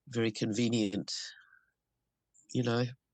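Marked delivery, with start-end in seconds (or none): none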